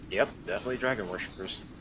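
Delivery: very quiet, low mutter under the breath. Speaker voicing Trevor's remark about the group, muttering under his breath. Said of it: "he mutters under his breath".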